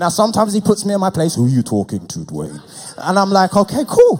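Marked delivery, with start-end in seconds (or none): 1.3-2.6 deep, low god voice, as from above. Retelling how God puts him in his place, in a God voice. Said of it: "it just sounds better like to do God's voice like that".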